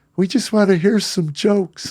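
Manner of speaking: very high, squeaky woman's voice. Comedian retelling a woman in the back at a late show, squeaky woman's voice. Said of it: "some squeaky voice in the back".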